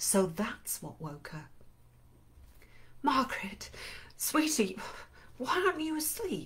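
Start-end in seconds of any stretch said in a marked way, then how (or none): 3.0-6.5 husky voice, raised pitch. Narrating a story, a mother peers into her daughter Margaret's eyes: husky. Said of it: "she asks huskily".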